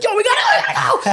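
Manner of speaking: excited scream, high-pitched, fast, laughing.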